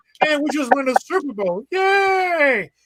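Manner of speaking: "yay" pitched very high and dragged out. Mocking a Chiefs player's voice before a game, in a Kermit the Frog voice. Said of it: "with the voice of Kermit the Frog".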